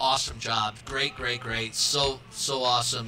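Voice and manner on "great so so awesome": ordinary talk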